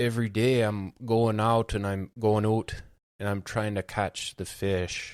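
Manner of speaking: loud, thick put-on rural Canadian accent slipping into Irish. Imitating a contestant from backcountry canada: imitating a thick canadian accent. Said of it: "his Canadian accent is the thickest thing".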